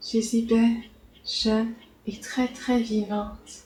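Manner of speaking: flat, monotone delivery. Narrator reading a character's line from a transcript, in a monotone voice. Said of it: "c'est Nancy qui reprend d'une voix monotone".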